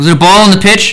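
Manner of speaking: shrill, high, loud yelled call. A baseball broadcaster yells down to the umpire with the mic on, yelling. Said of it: "I'm trying to yell down to the umpire".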